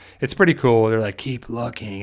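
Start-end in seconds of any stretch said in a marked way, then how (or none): 1.2-2.0 put-on creepy voice, quieter. Retelling an episode scene, doing the Whisperers' creepy voice. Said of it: "the whispers come around in their creepy voice".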